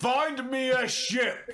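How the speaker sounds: very high, slow half-orc screaming voice. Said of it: "two half-orcs screaming at you".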